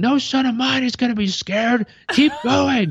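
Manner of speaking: mock very high, carrying yell. Retelling dad yelling from the bottom of the ski slope: imitating dad yelling. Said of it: "him being at the bottom of the slope yelling".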